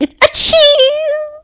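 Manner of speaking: high, slow, drawn-out, exaggerated dainty mock sneeze.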